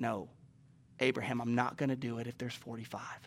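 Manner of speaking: gentle, soft, deep, hushed fatherly voice. Speaker imagines the answer to the bargaining, voicing God, gentle and fatherly. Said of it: "in a gentle, fatherly tone".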